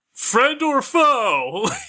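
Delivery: loud high yell, "foe" drawn out. A character calls out into the dark, yelling out. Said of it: "And just yell out".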